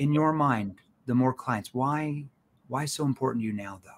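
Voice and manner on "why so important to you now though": soft, gently worried, caring, probing tone. Asking a probing question about getting more clients, lowered, concerned tone. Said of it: "I lower my tone in that concern tone".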